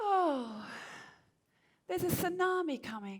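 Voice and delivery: laid-back, relaxed, unbothered island manner. Retelling what a local woman said about a tsunami: imitating a relaxed island tone. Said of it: "She said in her very relaxed island tone".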